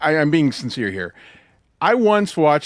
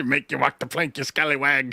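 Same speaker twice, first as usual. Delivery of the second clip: mock pirate voice, quieter; 4 dB quieter than usual. Joking about imagining someone acting like a pirate: put-on pirate voice. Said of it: "acting like a pirate".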